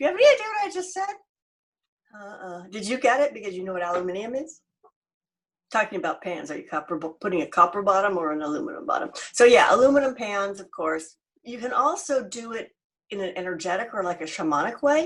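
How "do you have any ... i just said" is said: high-pitched, fast, teasing delivery. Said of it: "they're like".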